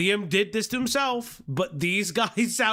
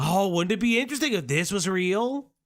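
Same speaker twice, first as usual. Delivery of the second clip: snide, sarcastic, derisive, faux-curious tone. Mocking how some accusers talk about a theory: mocking imitation of accusers. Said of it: "They sound just like them".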